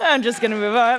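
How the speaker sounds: crying while speaking. Addressing the gathered group and crying mid-speech, crying while speaking. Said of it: "I don't know why I'm crying".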